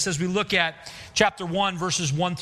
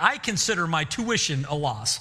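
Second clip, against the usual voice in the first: usual speaking voice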